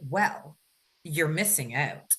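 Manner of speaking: put-on matter-of-fact, plain tone. Retelling the way she said it, imitating a matter-of-fact tone. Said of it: "it was so like matter of fact".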